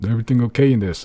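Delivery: gruff, very loud barking voice. A voice calls through the door after a loud thudding, gruffer voice. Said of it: "a gruffer voice".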